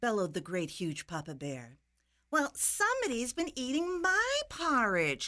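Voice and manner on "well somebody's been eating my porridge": higher-pitched, complaining, grumbling voice. The middle-sized mother bear finds someone has eaten her porridge; complaining. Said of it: "complained the middle-sized Mama Bear".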